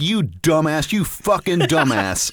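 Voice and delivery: slow, heated, angry berating. Recounting chewing out a guy in the chow hall, retelling an angry yell. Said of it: "I just fucking light into this dude".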